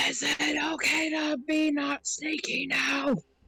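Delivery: whispering loudly. Asking across the room whether to stop being sneaky: whispering across the room. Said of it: "Mosswood is gonna whisper across the room".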